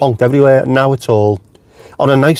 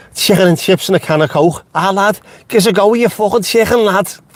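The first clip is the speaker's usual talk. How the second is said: pitched-up Liverpool Scouse accent; 7 semitones higher than usual. Doing an accent just for Jenny: Scouse accent. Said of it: "In a Scouse accent".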